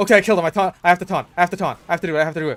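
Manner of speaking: put-on desperate yelling, shrill babble, very loud. Continuing the imitation of the enemy heavy player: imitating a desperate player. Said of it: "And he is desperate".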